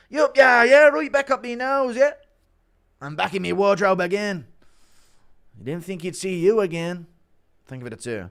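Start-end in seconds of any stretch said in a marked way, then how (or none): 0.1-7.0 loud, raised ranting voice. Performing an announced impression of McGregor relapsing, Conor McGregor impression. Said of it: "Impression of McGregor relapsing".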